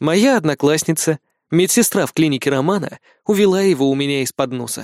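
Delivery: ordinary delivery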